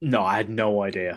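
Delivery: very low, sarcastic, sardonic delivery. Answering someone's remark about loving to correct mistakes: sarcastic. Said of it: "No need to be sarcastic".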